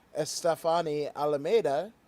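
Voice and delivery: ordinary talk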